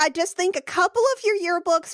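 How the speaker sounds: high, loud, pushy motherly voice.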